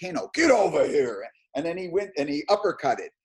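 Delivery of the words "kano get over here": loud, shouted-out yell. Retelling how Rich yelled during a weapon demo: imitating Rich yelling as Kano. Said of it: "Rich yelled out".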